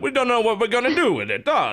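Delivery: put-on mobster voice, high and swooping. Repeating another speaker's line back to them: imitating an Italian-American mobster. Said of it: "you almost sounded like an American Italian mobster there".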